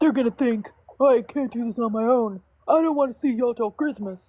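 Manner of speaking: bad deep-voice attempt, pitched high. Retelling a part of the show you loved, do a bad Roman Reigns impression, not deep enough. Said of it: "my worst Roman Reigns impression because I can't go that deep".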